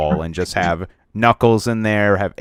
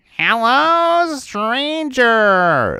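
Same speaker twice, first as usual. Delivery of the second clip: drawn-out, high-pitched robot voice; 4 dB louder than usual. Showing another speaker how the robot Claptrap talks: Claptrap voice. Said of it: "I can actually do a Claptrap".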